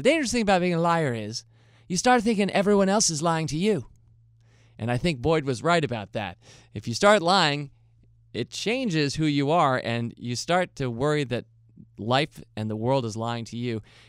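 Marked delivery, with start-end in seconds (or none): 0.0-3.8 put-on Northern Irish accent, higher pitched. Quoting an old favorite's saying about liars: Morris Boyd's Northern Irish accent. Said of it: "he would say in his Northern Irish accent".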